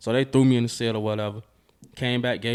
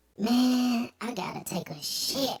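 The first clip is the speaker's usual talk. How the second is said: very high, soft, small little voice; 13 semitones higher, 5 dB quieter than usual. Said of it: "His voice ain't match his body".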